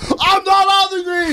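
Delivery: acted-out yell, very high-pitched. Retelling what a guy yelled back at them on the golf course, retelling a yell. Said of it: "He just fucking yells at me".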